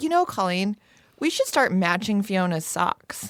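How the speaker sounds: ordinary delivery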